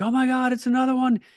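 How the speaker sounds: put-on panicked outburst, voice pitched way up. Retelling seeing the plane and explosion while on the phone, the speaker reenacts freaking out. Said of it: "I'm just like freaking out".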